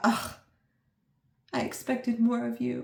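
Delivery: put-on disappointed tone. Picturing the listener as a disappointed mother, doing a mock disappointed mother. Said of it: "like a disappointed mother going".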